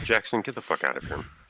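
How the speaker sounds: words carried on a sigh while speaking. Voicing an infernal elf ordering Jackson out: sighing while speaking. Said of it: "The infernal elf sighs and says".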